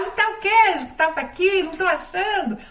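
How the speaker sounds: high-pitched, helpless, loud yelling.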